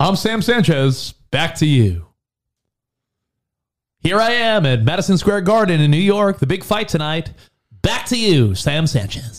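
put-on on-the-scene tv news broadcaster delivery. Joking that a name sounds like a TV reporter: mock news broadcaster voice. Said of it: "Sounds like a news broadcaster".

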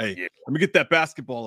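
put-on tough-guy talk. Retelling what they say to strangers at pickup sports: imitating own badass talk. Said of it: "why am I talking like I'm badass".

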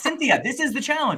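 very high, shrill yelling. Retelling yelling at the TV during a show: imitating own yelling at TV. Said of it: "I was yelling at my T V".

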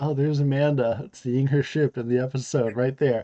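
ordinary talk

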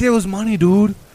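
put-on high, thick northern Canadian accent. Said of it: "imagine some guy with a thick Canadian-ish or northern-ish accent".

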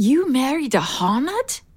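slow, stunned, shocked disbelief. Hearing another speaker's news, the listener responds shocked. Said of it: "don't sound so shocked".

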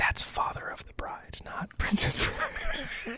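gentle, slow, hushed whisper. Retelling how someone gently corrected a movie mix-up: imitating a whisper. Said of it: "leaned over and whispered in my ear".

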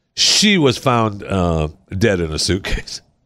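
talking through a laugh, drawn out. Telling another speaker about a death, laughing while talking. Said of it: "Why are you laughing?".

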